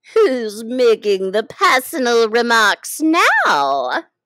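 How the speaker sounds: loud, triumphant, gloating, drawn out. The Hatter asks Alice his question triumphantly. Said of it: "the Hatter asked triumphantly".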